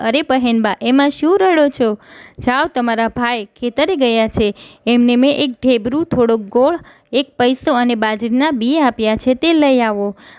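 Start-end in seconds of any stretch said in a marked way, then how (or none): none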